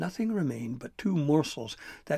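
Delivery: ordinary delivery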